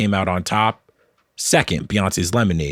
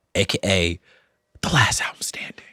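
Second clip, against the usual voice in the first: hushed whisper; 4 dB quieter than usual. Host explaining the show's season finale before turning to Cole, whispering. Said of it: "I don't know why I'm whispering that".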